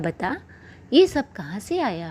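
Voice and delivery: ordinary talk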